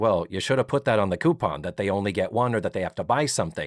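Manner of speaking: catty, snide, sarcastic, unsympathetic tone. Acting out what a character should have said: imitating a catty, sarcastic line. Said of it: "Catty and sarcastic".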